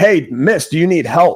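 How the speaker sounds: friendly, mild, projected calling-out voice. Speaker recounts calling out to a stranger across a parking lot, retelling a yell. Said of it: "yelled over to her across the parking lot".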